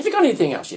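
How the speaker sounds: high, put-on Irish brogue. Retelling a man's question as he took bikes, imitating a brogue. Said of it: "in their brogue".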